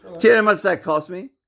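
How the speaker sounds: shouting. Arguing while another person urges them to relax, yelling. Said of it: "We don't need to yell".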